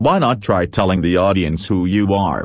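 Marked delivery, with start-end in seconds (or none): none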